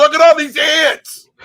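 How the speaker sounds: shrill, very high, very loud scolding yell. Retelling what they did when they approached: yelling like somebody's dad. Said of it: "I start yelling like I'm somebody's dad".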